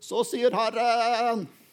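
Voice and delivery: theatrical trembling vibrato. Mocking people who proclaim what the Lord says: with a bit of vibrato. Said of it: "Gjerne med litt sånn vibrator".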